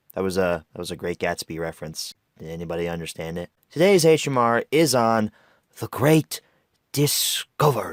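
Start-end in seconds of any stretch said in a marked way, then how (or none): 3.7-8.0 very slow delivery, every word drawn out. Announcing the review topic: Pierce Brosnan impression. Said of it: "That was my best Pierce Brosnan impression".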